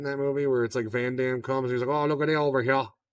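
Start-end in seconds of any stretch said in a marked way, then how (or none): 1.9-2.9 put-on phony Louisiana accent, laid on thick. Imitating an actor in a movie: Wilford Brimley fake Cajun accent. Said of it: "such a fake Cajun accent".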